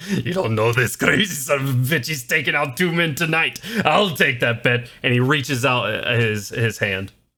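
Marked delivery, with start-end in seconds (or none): 0.1-4.9 orc character voice. Voicing an orc who is approached by a player: orc voice. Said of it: "large orc creature".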